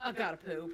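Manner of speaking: forceful, blunt, aggressive delivery. Retelling how a child announces at dinner: imitating an aggressive announcement. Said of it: "so aggressive the way he says it".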